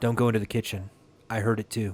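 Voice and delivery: hushed whisper. Narrator reads a mother whispering to her child, in a whisper. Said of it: "She whispers to her child".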